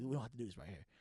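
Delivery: put-on low calm voice. Retelling pleading with a girl not to fight: imitating talking calm and low. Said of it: "I'm trying to talk low, you know, calm and low".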